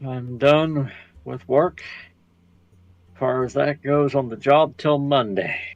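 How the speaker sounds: dejected, flat, down, depressed voice. Answering whether he's done with work for the day, sounding depressed. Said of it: "You sound depressed".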